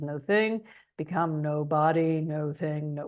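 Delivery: deep, low, calm meditation guide voice. Quoting words from Dr. Joe's meditations, in Dr. Joe's deep voice. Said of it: "with his deep voice".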